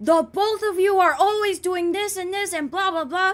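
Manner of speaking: put-on overwhelmed screaming, high and loud. Retelling how the speaker's dad started screaming at them, imitating dad screaming. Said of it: "he just starts screaming".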